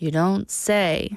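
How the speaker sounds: dismissive, low, bored, sarcastic tone. Teaching English intonation, giving the sarcastic version, sarcastic and dismissive. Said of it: "But with sarcasm".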